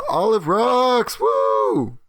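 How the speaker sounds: high, booming, swooping magical echo call. Using magic to make the voice echo across the wilderness: magically echoing voice. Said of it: "use thaumaturgy to just make my voice echo".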